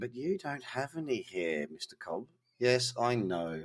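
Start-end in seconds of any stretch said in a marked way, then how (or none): 0.0-2.3 acted, hushed, very quiet, smug taunting tone. Imitating the listener's imagined retort to him, mock-smug. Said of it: "I can hear you smugly saying".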